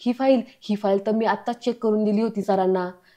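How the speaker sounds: plain reading voice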